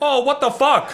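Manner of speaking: mock indignant high outburst. Retelling how the men reacted to a joke: imitating someone getting mad. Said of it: "and they would get so mad".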